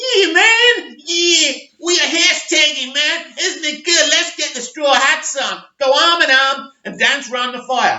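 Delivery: terrible put-on American accent. Mocking how many YouTubers would talk: terrible American accent. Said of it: "Terrible American accent".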